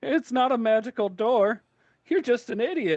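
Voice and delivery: very high, cackling woman's voice. Game narrator voices an unseen voice speaking to a player, cackling woman's voice. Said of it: "It's a woman's voice, kind of cackling".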